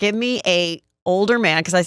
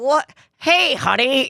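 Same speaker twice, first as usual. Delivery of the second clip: high, put-on elderly voice; 6 semitones higher than usual. Retelling how someone answered her call in a put-on old voice. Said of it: "do an old voice".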